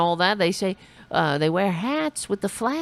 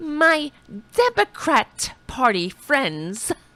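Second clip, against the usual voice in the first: slow, pitched-up mock over-enunciation, every syllable drawn out; 5 semitones higher than usual. Mocking how Republicans over-enunciate to sound smart; Lauren Boebert over-enunciating. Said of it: "over enunciate, they sound really authentic and smart. Lauren Boebert does the same thing, but she's like".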